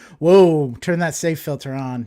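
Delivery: ordinary delivery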